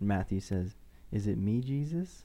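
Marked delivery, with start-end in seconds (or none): none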